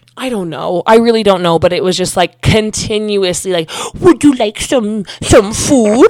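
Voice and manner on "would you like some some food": put-on loud, gushing, babyish baby talk. Retelling how an ex kept talking to her: imitating baby talk. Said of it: "baby talking me".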